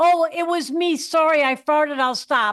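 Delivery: ordinary delivery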